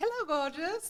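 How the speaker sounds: put-on Indian accent, pitched very high. Retelling how a friend greeted each guest at an event, imitating her Indian accent. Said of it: "she was from India and she had this great accent".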